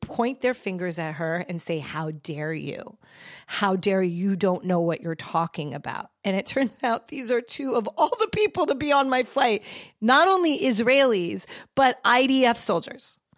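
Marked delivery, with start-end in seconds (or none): 1.8-6.1 mock enraged, furious outburst. Retelling how two people on a flight confronted a woman, mock-enraged outburst. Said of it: "they are filled with rage".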